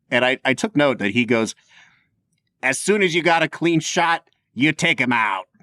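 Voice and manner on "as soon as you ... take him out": put-on very thick, heavy, broad Chicago accent. Quoting the deputy character at the end of the movie, thickest Chicago accent. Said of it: "just the thickest Chicago accent".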